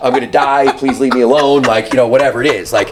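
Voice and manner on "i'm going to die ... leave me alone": plain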